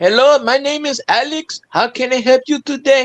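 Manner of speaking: high put-on Indian accent. Telling about phone scammers, imitating the caller's greeting: imitated Indian accent. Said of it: "they had an Indian voice".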